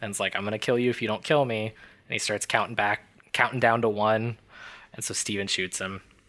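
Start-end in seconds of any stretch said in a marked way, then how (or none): 0.4-1.7 put-on, pleading, begging tone. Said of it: "he begs Steven to kill him".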